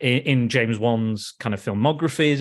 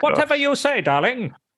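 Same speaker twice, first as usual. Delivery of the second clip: puppet voice, pitched very high; 12 semitones higher than usual. Speaker replies to a joke about his wife in his puppet voice. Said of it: "that's your puppet voice".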